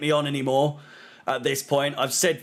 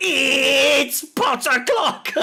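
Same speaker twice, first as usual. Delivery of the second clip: mock-screaming, much higher and louder; 11 semitones higher, 4 dB louder than usual. Describing TikTok edits made of them, retelling own scream. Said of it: "my face just pops up and starts screaming".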